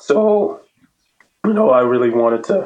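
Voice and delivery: cracking, catching, breaking voice. Talking about playing a lot with Maeve on national teams, voice breaking up. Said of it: "my voice is breaking up here".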